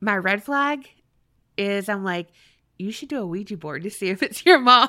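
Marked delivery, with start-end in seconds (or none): 2.8-4.9 talking with words broken up by laughter. Joking about a Ouija board while talking: laughing while talking. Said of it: "You know what you sounded like, how you said that?".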